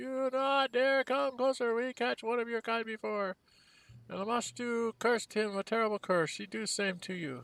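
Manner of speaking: high, quavering, trembling goblin voice howl. The bravest goblin steps out, shaking his fist, in a quavering goblin voice. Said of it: "howls at you in a quavering voice".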